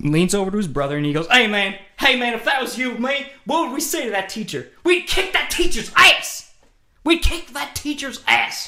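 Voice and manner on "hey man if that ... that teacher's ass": mock shrill, very high drunken hollering. Retelling what a drunk man yelled to his brother in a theater, imitating a drunk guy yelling. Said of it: "He yells it".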